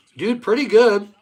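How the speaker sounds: talking with mouth full. Answering a greeting while eating late, talking with mouth full. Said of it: "Sorry, my mouth's full".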